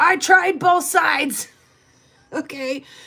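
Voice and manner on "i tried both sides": loud, angry-sounding yelling. Speaker retells a man at the gas station, imitating a man yelling. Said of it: "if you'd please stop yelling at me".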